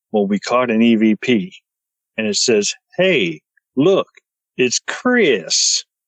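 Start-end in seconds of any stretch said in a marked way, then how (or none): 2.9-5.8 put-on drawled, slow southern US accent. Retelling a voice caught on an EVP recording, in a southern drawl. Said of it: "in a southern draw".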